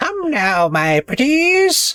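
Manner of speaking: very high, very slow, drawn-out storybook villain voice. Voicing a granny character who runs a baking shop, in a villain voice. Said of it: "That's your villain voice?".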